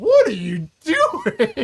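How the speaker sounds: high, loud, drawn-out, stretched-out outcry. Recounting a scene, the speaker quotes Bert walking in: Bert's voice. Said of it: "that's like the voice that he's".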